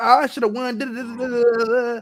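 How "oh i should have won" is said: put-on young female voice with American regional dialect.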